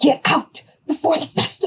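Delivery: high, sibilant hiss forced through. Game narrator voices a girl speaking to the player, hissing. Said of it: "she hisses".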